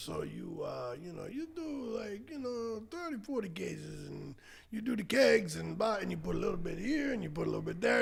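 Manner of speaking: put-on animated, high-pitched Italian accent, hesitant, full of fillers. Retelling what a man told him at a wedding, in an Italian accent. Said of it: "He's still got an Italian accent".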